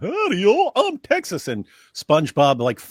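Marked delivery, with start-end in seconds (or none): 0.0-1.5 very high, slow, drawn-out cartoon voice. Retelling a cartoon clip mocking Texas: imitating SpongeBob mocking Texans. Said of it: "SpongeBob and Patrick start making fun of Texas".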